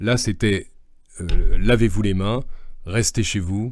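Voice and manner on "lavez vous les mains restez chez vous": louder, closed-off, clipped delivery. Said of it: "c'était tout fermé".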